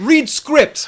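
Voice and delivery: put-on loud, high, broken-English Russian accent. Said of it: "your Russian accent".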